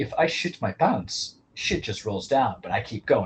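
put-on Slovenian accent. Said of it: "That's my Slovenian accent".

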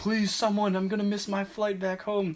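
put-on pleading yell, pitched high. Retelling a man who keeps yelling in the line, retelling a man's yelling. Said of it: "he keeps yelling".

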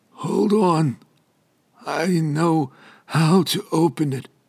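hoarse, weak mumble, high and very slow. A weary medic tells Franklin to hold on, in a hoarse, weak mumble. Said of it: "This person wore the uniform of an emergency medical technician. ... His voice was hoarse and weak".

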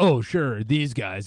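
put-on combative, retorting tone. Retelling what she said, imitating a combative tone. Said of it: "it just has this very combative tone".

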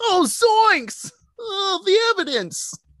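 very high, goofy, drawn-out cartoon exclamation. Acting out a character reacting in an imagined horror scene: comic exclamation.

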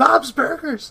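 put-on full yell, high-pitched and carrying. Retelling a scene from a show: imitating a character yelling. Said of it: "and you hear him yelling".

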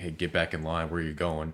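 plain

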